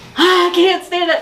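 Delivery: put-on high, slow, near-crying, desperately eager kid voice.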